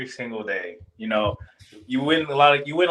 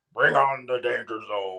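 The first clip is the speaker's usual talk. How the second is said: fake cartoonish brute voice. Giving a final thought in a Bluto accent. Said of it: "in my best Bluto accent".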